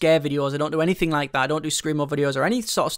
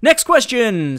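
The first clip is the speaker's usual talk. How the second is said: loud, pitched-up on-air radio presenter voice; 6 semitones higher, 7 dB louder than usual. Switching back from a normal accent to take the next question: radio voice. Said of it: "now we're back on to the radio voice thing".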